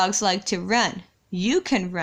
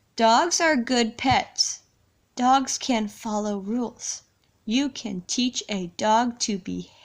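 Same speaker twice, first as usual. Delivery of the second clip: deliberate, slow, careful reading aloud, word by word. Reading a book aloud with the listener before their turn, slow careful reading. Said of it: "I'm going to read nice and slow".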